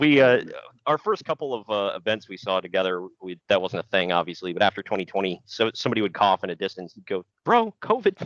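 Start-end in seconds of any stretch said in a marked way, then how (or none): 7.5-8.3 very high, squeaky voice. Retelling what a companion would say when someone coughed nearby, imitating his squeaky voice. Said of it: "In his squeaky voice".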